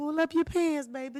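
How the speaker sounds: put-on high, slow little old lady teacher voice. Retelling what a little old lady at school would say: imitating Miss Curtis. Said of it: "this little old lady at our school, named Miss Curtis".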